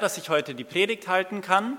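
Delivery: stress on kann.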